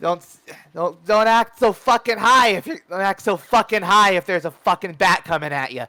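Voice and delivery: high-pitched, very loud, full-volume yell. Narrating a scene where an attacker yells at the hero, yelling. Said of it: "he just yells like".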